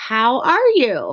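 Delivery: pitch rises at the end on "you". Explaining how a question mark sounds, question with rising end. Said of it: "Your voice kind of goes up".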